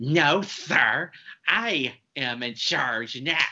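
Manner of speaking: very slow, drawn-out, not-so-good attempted cartoon duck voice. Retelling a movie's opening cartoon gag: attempted Daffy Duck voice. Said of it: "Maybe one day I'll be able to do a good Daffy".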